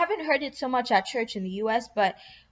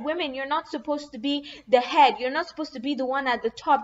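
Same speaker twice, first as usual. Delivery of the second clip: put-on Nigerian accent; 2 semitones higher than usual. Quoting what another woman literally said, in a Nigerian accent. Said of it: "I should use my Nigerian accent".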